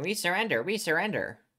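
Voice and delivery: put-on high grunting creature voice, repeated cry. Game narrator voices enemies heard from the next room, in grunt voice. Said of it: "it just keeps repeating in grunt voice".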